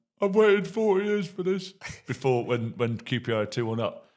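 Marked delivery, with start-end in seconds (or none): 0.2-1.7 tearful, very high crying voice. Retelling how a mate reacted during a football match: imitating Chris crying. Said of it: "he's sucking his thumb, crying, going".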